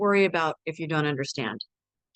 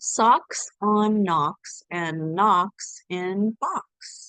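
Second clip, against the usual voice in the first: much slower pace. Reading Fox in Socks aloud for sound practice, said more slowly. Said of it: "I'll say it more slowly".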